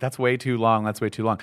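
ordinary delivery

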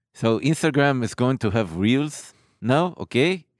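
put-on English spoken with an Israeli accent. Showing how Israelis talk, in an Israeli accent. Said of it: "They talk like this".

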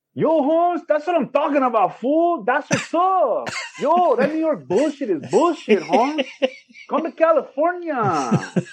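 put-on high-pitched California street accent. Retelling a cousin's phone reply about an upcoming visit: imitating cousin Sharif. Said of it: "I'm imitating my cousin Sharif".

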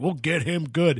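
plain

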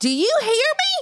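put-on very high, slow, thick Southern accent, hollered. Retelling how an old boss from Louisiana yelled down the hall: imitating Nancy's thick Southern yell. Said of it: "yell things down the hall at me with an accent so thick".

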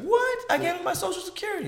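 very high, fast shocked squeal.

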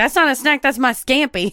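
put-on rural country woman's accent. Retelling what a traveler said at airport security: imitating a country woman. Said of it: "She was real country".

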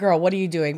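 ordinary talk, nothing marked

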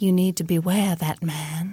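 soft, gentle, all-knowing voice. The next-door neighbor warns Keisha about a man, soft, all-knowing voice. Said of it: "she talks in a soft, all-knowing voice and says".

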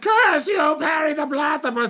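silly, very high, squeaky cartoon voice. A voice actor, asked for his most requested voice, does a silly Dr. Doofenshmirtz voice. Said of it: "it's actually my silly voice that comes out of his face".

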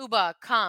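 ordinary talk

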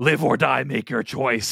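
rough, creaky, scraped horror-villain voice. Repeating a Jigsaw line for the others: Jigsaw voice. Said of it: "that's my Jigsaw".

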